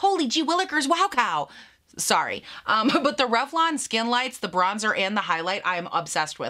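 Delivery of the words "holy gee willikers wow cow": exaggerated, sing-song Northern Michigan accent. Reviewing makeup products, the speaker jokes in an exaggerated Northern Michigan accent. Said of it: "Could I sound more Northern Michigan?".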